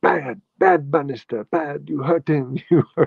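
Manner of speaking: put-on high woman's voice with Jamaican accent. Retelling what a woman said after you got hurt on a banister, Jamaican accent. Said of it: "she had this great accent".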